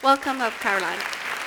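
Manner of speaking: loud, warm, open call.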